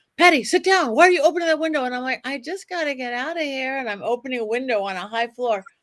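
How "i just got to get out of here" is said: put-on small childlike girl's voice. Retelling opening a high window while Zach says to sit down: little girl voice. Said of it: "I get this little girl voice".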